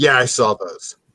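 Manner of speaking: mock deadpan delivery. Imitating another speaker's casual remark: imitating a deadpan reply.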